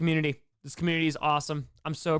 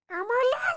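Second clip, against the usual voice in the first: very high squeak pushed up until the voice cracks. Trying out an Elmo voice for chat, voice cracking: cracking Elmo voice attempt. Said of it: "my voice just cracked".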